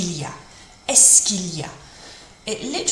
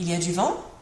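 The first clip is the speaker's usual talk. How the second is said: statement tune turning question-like, rising on vent. French lesson, turning a statement into a question: voice rising at the end. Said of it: "by putting your, your voice up at the end, that rising intonation turns it from a statement into a question".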